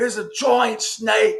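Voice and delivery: put-on very high Australian accent. Retelling a comedian's bit about a wildlife host: Steve Irwin accent. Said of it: "he does his accent really well".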